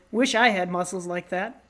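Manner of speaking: ordinary talk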